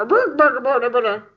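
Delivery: fake, put-on Swedish-accented babbling voice. Imagining the cook beating spaghetti with a spoon: Swedish Chef voice. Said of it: "he would have just beat them with a spoon and been like".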